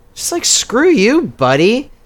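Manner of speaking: ordinary talk, nothing marked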